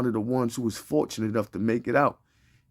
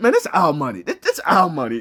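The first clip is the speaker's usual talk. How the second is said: loud, swooping delivery dripping with attitude; 5 semitones higher, 6 dB louder than usual. Repeating another speaker's words back to mock them: imitating a line with attitude. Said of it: "you hear the attitude?".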